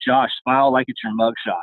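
imitated whispering. Retelling a line whispered in the speaker's ear during a hug: imitating a whisper. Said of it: "he whispers in my ear".

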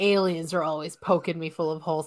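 wry, wisecracking, quippy delivery. Guessing who said a Stargate quote, doing a Richard Dean Anderson impression. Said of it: "That's my Richard Dean Anderson impression".

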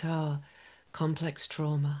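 quiet, under-the-breath murmur. Retelling the therapist's reaction to hearing these events, said under her breath. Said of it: "she just under her breath went".

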